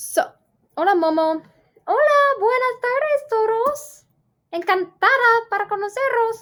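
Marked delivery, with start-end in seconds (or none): 1.9-6.4 very high, slow, silly put-on character voice. Greeting the class during a Spanish mini lesson, in a put-on character voice. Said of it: "I know I do that voice".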